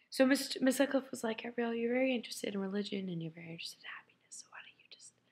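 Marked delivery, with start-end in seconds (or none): 1.4-5.1 angelic, soft-spoken, hushed voice. Retelling what Miss Sutcliffe said about religion and happiness, imitating Miss Sutcliffe's soft voice. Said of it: "I'm speaking in a soft voice because she does".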